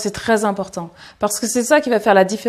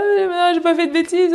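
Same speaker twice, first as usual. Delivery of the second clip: fake quavering tearful voice, higher; 8 semitones higher than usual. Showing how the voice trembles when caught up in emotion: mock trembling voice. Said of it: "la voix tremblotante comme ça".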